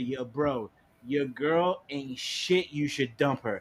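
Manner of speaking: cocky, brash, rude, disrespectful tone. Retelling what he told the girl's boyfriend: imitating a disrespectful drunk remark. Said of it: "you got real disrespectful and shit".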